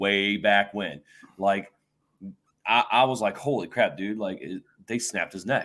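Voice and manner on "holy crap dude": usual speaking voice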